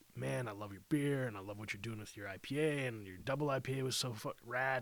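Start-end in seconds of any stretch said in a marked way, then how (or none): none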